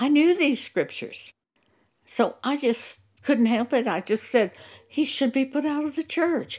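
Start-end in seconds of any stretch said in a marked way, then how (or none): 4.9-6.6 blurted out with conviction, pitch raised. Retelling a remark made in a church congregation, reenacting saying it softly. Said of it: "I said it very softly".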